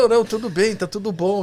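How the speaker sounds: meek, easygoing, gentle, mild tone. Retelling how the doctor calmly answered the woman outside: imitating Marcelo speaking softly. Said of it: "ele fala bem mansinho assim".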